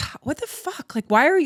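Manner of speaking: mock passionate, upset, high-pitched blurted outburst. Retelling her own past reaction to being abandoned: imitating her own upset reaction. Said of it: "when I would get upset about that".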